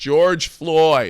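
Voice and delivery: offhand, mild heckling call-out. Retelling how a stranger yelled out while Beetlejuice was on stage: imitating someone yelling. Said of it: "guy I never met before yells".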